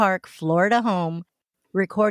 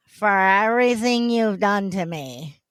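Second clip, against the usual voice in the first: put-on slurred drunk voice. Speaker retelling a video, acting out Sarah answering the suitcase, imitating Sarah's drunk voice. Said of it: "That's my best Sarah drunk voice".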